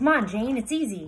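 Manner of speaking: very loud, gleeful, cheerful calling out. Narrator reading Jebediah Parker calling to Jane on a rooftop, calling gaily. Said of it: "he called gaily".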